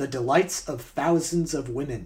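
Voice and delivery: normal talking voice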